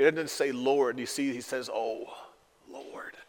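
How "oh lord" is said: put-on breathy, hushed, anguished groan. Reading aloud the prophet Habakkuk crying out to God, a groaning cry. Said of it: "His heart is groaning within him".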